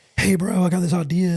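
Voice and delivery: ordinary talk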